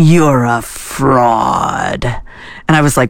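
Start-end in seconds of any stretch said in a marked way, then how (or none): 0.0-2.0 icy, menacing, steel-cold, evil voice. Retelling what a guy across the table said to him, in a steel-cold evil voice. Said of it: "in this like really just steel cold evil voice".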